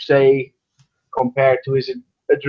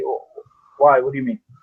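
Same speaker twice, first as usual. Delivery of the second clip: quick, casual, offhand nonchalant delivery. A character looking over the area replies to another, nonchalant. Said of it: "he just kind of says nonchalantly".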